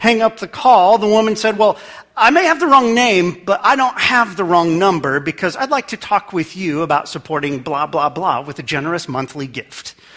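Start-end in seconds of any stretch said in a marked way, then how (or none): none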